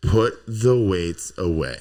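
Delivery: emphatic, deliberate, slow, loud, weighty delivery.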